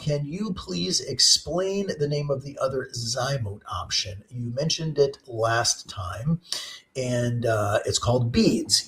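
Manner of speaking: ordinary talk, nothing marked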